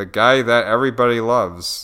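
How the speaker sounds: ordinary talk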